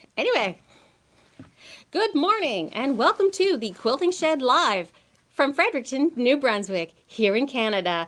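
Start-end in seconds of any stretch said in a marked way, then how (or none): 1.9-8.1 polite, professional customer-service voice, pitched up. Host opening the Quilting Shed Live show, greeting viewers in customer service voice. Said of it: "that is my customer service voice".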